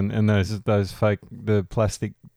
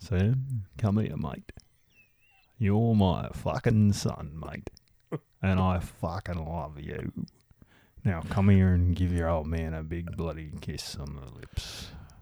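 soft, friendly, matey bloke voice; 3 semitones lower, 6 dB quieter than usual. Imagining Rusty claiming Sam as his son, in a Rusty impression. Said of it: "I've got to get the voice right".

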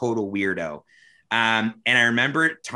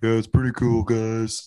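hushed, deep, quiet put-on sexy voice. Showing how Thomas talks while his wife sleeps: imitating Thomas's voice. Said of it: "Thomas does do that voice".

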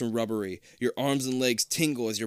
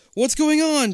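very high, loud, panicked cry of alarm; 8 dB louder than usual. Narrator reading a story aloud as the character Jason: Jason's panicked cry. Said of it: "Jason cries in panic".

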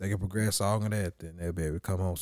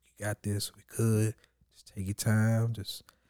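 put-on whispering voice; 2 semitones higher than usual. Retelling what was said to a partner in labor: retelling a whisper. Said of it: "I'm just sitting there whispering there".

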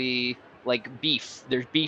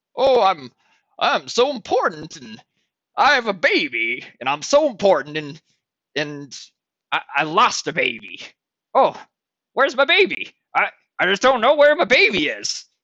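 mocking put-on old man voice, much higher, louder; 6 semitones higher, 6 dB louder than usual. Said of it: "he makes this voice".

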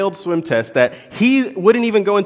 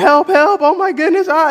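put-on frantic, very high-pitched, panicked little kid cries; 11 semitones higher, 4 dB louder than usual. Retelling a child thrashing and gulping for air in the pool: imitating a panicked child. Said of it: "Timmy panics".

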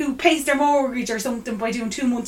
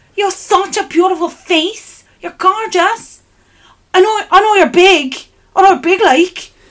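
broad, loud, pitched-up put-on Cork accent; 7 semitones higher, 8 dB louder than usual. Retelling a compliment someone from Cork gave her at a party, in a Cork accent. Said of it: "They were from Cork".

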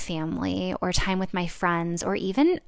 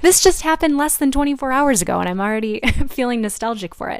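choking up, high, raised voice, close to tears; 5 semitones higher, 7 dB louder than usual. Recalling an evening with mom just a day ago, close to tears. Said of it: "starting to cry".

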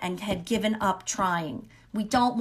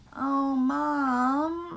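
mock, high, whiny voice with "mom" drawn out; 7 semitones higher than usual. Explaining how she used to react to her mom, imitating her whining. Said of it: "she would kind of whine".

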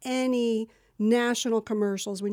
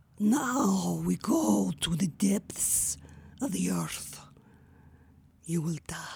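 whispered, breathy, menacing evil queen voice; 2 semitones lower than usual. Asked to show a voice from one of her audition scripts: evil queen voice. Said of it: "Can we hear that evil queen voice?".

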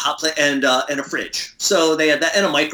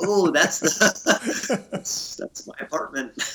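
soft laughing disbelief. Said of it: "I'm like".

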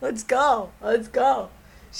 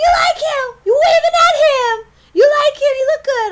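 very high, shrill, very loud screaming; 14 semitones higher, 10 dB louder than usual. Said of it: "She starts yelling at us".

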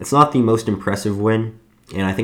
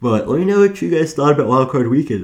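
speaking through a yawn, higher and louder; 7 semitones higher, 4 dB louder than usual. Talking to viewers while feeling tired, yawning while talking. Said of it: "right now I'm yawning".

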